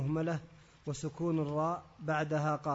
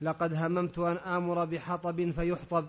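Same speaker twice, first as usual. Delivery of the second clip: plain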